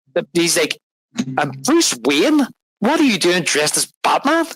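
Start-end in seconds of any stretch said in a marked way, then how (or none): 1.7-4.5 baffled, incredulous, high, swooping confused tone. Recounting a scene where he questions Bruce Wayne: imitating confused disbelief. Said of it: "He's confused".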